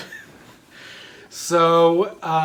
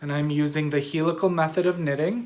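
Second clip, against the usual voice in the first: usual speaking voice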